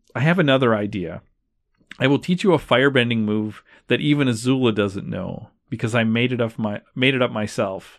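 ordinary talk

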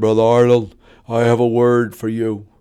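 very deep bass voice, dropped low. Retelling a friend's phone call, imitating Brother Klepper's very deep voice. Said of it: "he had a very deep voice".

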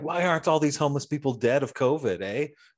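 play-acted berating yell, as through a bullhorn. Speaker retells a woman at a rally yelling through a megaphone; retelling a megaphone yell. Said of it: "like yelling at the homeless people".

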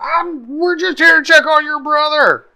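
very high, loud scream. Narrating a character's attack, screaming in character.

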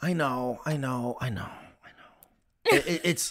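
worn-down, defeated, resigned, giving-up tone. Torn about whether people will understand it, the speaker sounds defeated. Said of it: "you sound so defeated".

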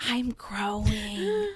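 put-on child's whisper. Retelling what a child whispered while having his back rubbed: imitating a child's whisper. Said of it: "rolls back over and whispers to me".

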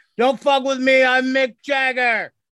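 put-on confrontational shout, high and drawn out. Retelling a news story about a drunk diner patron: imitating someone shouting. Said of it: "He just shouted out things like".

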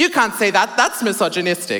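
mock outburst, high-pitched, indignant, yelled out. Retelling interrupting sermons as they used to: imitating own past yelling. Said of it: "I used to yell out in sermons exactly like this".

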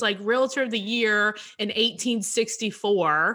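ordinary delivery

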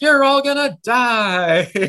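play-acted very high, loud, drawn-out yell, "die" stretched. Retelling a scene where a character yells at everybody: imitating someone yelling. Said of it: "starts yelling at everybody in Italian".

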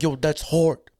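put-on casual, slangy way of talking like older man. Retelling how an older guy named Lester used to talk: imitating Lester's way of talking. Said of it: "he always used to be like".

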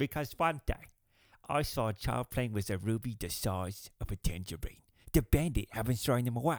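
put-on British accent. After saying he dislikes British people except one, the speaker does a Michael Caine impression. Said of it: "Except the one known as Michael Caine".

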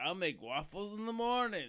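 cartoonish high pitch. Praising an actor's voice roles, quoting Donkey from Shrek in his voice. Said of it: "Shrek as Donkey is like".

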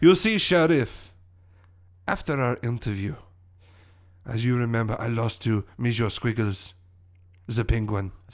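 put-on fake French accent. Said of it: "my French accent".

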